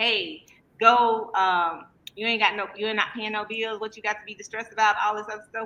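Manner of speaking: usual speaking voice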